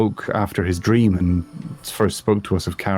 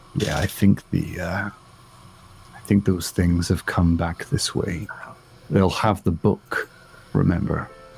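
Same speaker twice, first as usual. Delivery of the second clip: dropped voice, quieter; 2 semitones lower, 4 dB quieter than usual. Playing Thoric after learning they face the undead: Thoric, dropping his voice. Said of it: "Thoric will kind of drop his voice".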